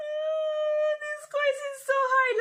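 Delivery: play-acted very high crying, oh stretched out. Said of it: "and I was crying".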